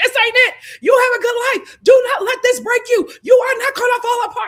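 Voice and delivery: loud, high, tough-love yelling. Retelling how a woman screamed at her crying friend to encourage her; imitating her screaming. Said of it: "she just started screaming at her".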